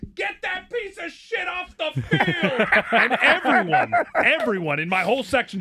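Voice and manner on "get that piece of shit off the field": put-on very high, shrill, drunken screaming. Retelling a drunk spectator in the stands during a game: retelling a drunk spectator's scream. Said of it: "this drunk animal just stands up and screams".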